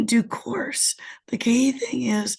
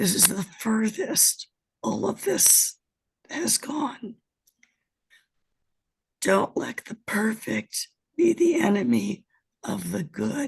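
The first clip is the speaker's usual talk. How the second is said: hoarse, husky voice. Speaking at a meeting after returning from a flight, hoarse voice. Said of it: "I have airplane voice".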